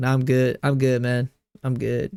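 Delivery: ordinary talk, nothing marked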